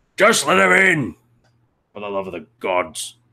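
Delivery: voice rising above noise, swooping call. Narrating a scene, a voice calls out over the crowd: voice rising over the din. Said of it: "this voice kind of rise up over the din".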